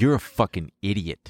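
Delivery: ordinary delivery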